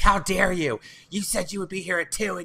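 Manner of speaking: enraged, high, furious yelling, completely losing it. Retelling how a neighbor screamed at customer service on the phone: imitating someone screaming. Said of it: "just losing it".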